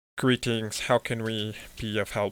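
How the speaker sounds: level, flat, droning monotone delivery. Narrator voices a crouched figure greeting the listener, in a monotone voice. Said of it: "He speaks in this monotone voice".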